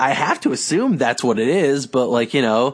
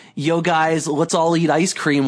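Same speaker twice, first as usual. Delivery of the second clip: plain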